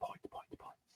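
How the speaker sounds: hushed, breathy, very quiet whisper. Predicting a low-scoring game, whispering. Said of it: "Maybe a whisper it quietly".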